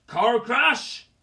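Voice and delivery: very loud, outraged, furious roaring bellow. Reading a story aloud, a character hears a lie: roaring angrily. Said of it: "roared Hagrid".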